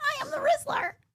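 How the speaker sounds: put-on boy voice, dropped. Joking about a kid whose voice changes as he grows: imitating the Rizzler after his voice drops. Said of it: "What happens when all of a sudden he talks like this?".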